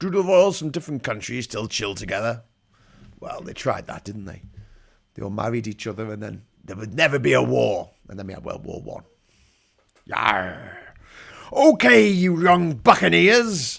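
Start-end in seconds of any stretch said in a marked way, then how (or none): 10.1-13.8 goofy, very slow, loud, high pirate voice. Narrating footage about the royals to viewers: silly pirate voice. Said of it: "talking bollocks in a silly pirate voice".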